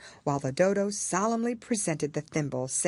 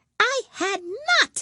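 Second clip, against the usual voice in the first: very high, sharp, furious cry; 6 dB louder than usual. A storytelling mouse snaps back at its listener; sharp, very angry. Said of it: "cried the Mouse sharply and very angrily".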